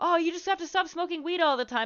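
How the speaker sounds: high-pitched, nagging, lecturing tone. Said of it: "she just kept hammering it into me".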